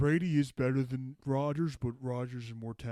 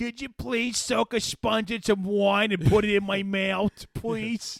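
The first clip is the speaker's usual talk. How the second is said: put-on raised, high-pitched old-man voice; 9 semitones higher, 8 dB louder than usual.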